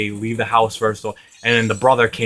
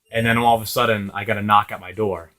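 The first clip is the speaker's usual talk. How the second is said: plain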